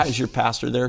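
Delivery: ordinary talk, nothing marked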